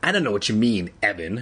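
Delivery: plain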